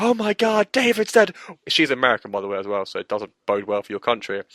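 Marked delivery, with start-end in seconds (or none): 0.0-1.4 acted very high, loud, frantic panicked shriek. Recounting a housemate who thinks another housemate died, imitating her panicked screaming. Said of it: "she runs around screaming for him".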